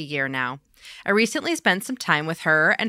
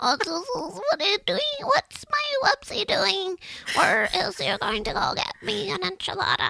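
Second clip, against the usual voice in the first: put-on very high baby-talk voice; 13 semitones higher, 3 dB quieter than usual. Acting out how they would talk, in a baby talk voice. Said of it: "their baby talk voice".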